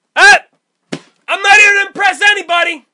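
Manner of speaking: very high, shrill scream at full volume. Reminding the listener what they kept saying at an empty place, imitating shouting as loud as possible. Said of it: "as loud as possible".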